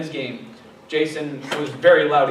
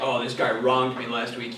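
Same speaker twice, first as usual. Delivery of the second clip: plain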